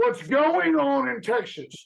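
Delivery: slow, rough, hoarse ranting voice. Asked to do an Alex Jones, giving an Alex Jones impression. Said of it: "Do you do an Alex Jones? ... I've done a few of them".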